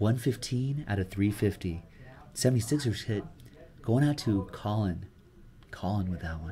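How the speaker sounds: low deep voice. Demonstrating a sleep video read close to the microphone, in a deep voice. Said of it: "use like a deep voice and just be like".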